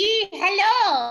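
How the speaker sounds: high witch voice with long drawn-out hello. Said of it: "Who wants to try this E voice?".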